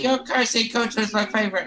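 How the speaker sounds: put-on small British little boy's voice and accent. Quoting what a little boy told her after the show; British little boy accent. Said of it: "and like in a British".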